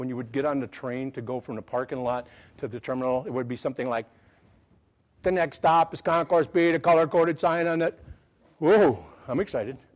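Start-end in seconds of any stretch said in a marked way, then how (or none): 5.2-8.0 loud, flat, robotic, computerized monotone. Imitating the parking-lot-to-terminal train announcement, in a computerized voice. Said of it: "that computerized voice".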